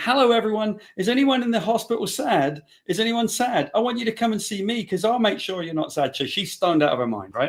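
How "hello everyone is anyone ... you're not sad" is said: mock very high, carrying call-out yell. Retelling how she yelled in the hospital hallway, imitating someone yelling. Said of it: "she's yelling".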